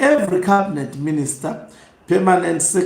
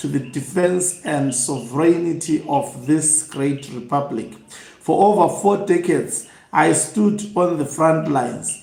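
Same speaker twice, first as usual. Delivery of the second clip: ordinary delivery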